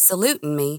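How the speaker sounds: plain reading voice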